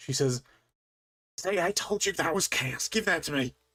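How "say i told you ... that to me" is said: half whispered, half shouted, pitched up. Game narrator voices a character trying to grab the player's horn, whisper-shouting. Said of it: "kind of whisper shouts".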